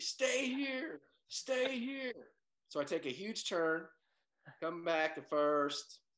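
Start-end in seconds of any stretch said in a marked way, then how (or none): 0.0-2.1 play-acted very high, drawn-out yelled scream. Retelling rounding first base, quoting the first base coach, imitating someone screaming. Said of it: "he's screaming back at me".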